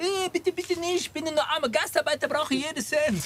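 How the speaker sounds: mock pleading, begging voice.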